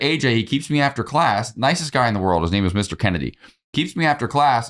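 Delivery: ordinary talk, nothing marked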